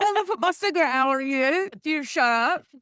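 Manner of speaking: put-on very high-pitched, very loud Cockney accent. Imagining how Lily talked back in the day, in a Cockney impression of Lily. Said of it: "That's my impression of Cockney".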